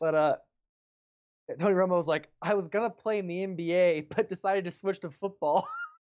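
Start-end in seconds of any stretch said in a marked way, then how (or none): 2.4-5.7 put-on casually tossed-off, nonchalant, offhand delivery. Retell what Tony Romo said about playing basketball, imitating a nonchalant remark. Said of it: "but he was saying it like nonchalantly".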